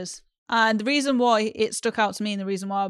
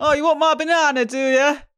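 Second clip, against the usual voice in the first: heavily laid-on put-on Northern English accent, higher pitch; 6 semitones higher, 4 dB louder than usual. Imitating the guy someone would pick for a date, in a put-on northern accent. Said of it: "why is he Northern?".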